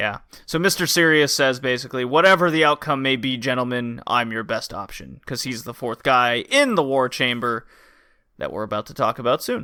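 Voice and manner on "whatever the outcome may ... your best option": put-on very low, serious voice. Recapping a wrestling show, a speaker quotes the super-serious guy, imitating a very low, serious voice. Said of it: "the guy with the really low voice".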